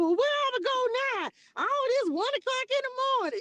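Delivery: very high-pitched, weepy, tearful crying voice. Retelling driving at night while talking to God, imitating crying, high-pitched. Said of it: "you get that real high pitched stuff when you going going on when you crying".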